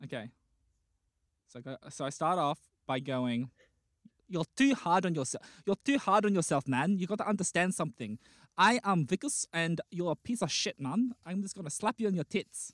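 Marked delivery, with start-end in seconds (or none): 4.3-12.7 clumsy, bad put-on South African accent. Showing off an accent after being asked to perform: put-on south african accent. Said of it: "I can do a good South African one".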